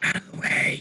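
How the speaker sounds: low, growling whisper. Telling allies in character to move aside: growling whisper. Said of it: "I'll have to growl, whisper to them".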